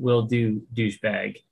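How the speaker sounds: low grumble, muttered, barely audible. In a tabletop game, a player's character replies to an offer, muttered under breath. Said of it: "Under my breath".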